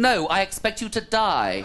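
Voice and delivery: posh movie-villain voice. Advising how to answer someone in a bar, the speaker demonstrates a posh Bond-villain voice. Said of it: "stay posh, think Bond villain".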